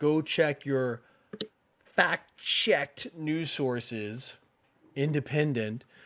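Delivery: super sarcastic, slow and heavy. Speaking to the listeners while rolling eyes: super sarcastic. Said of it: "I'm being super sarcastic".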